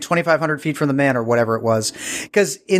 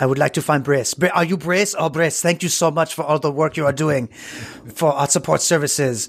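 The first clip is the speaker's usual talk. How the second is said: deliberately bad put-on French accent. Retelling a man thanking someone for support services work, in a bad French-sounding accent. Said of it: "I'm not doing his accent well".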